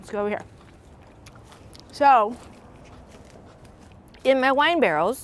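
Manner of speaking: talking through a mouthful, chewing while speaking. Showing the flowers in the wine barrels while eating, talking while chewing. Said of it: "sorry, I'm still chewing".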